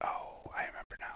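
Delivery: quiet, soft, hushed, barely voiced whisper. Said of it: "I don't know why I'm whispering".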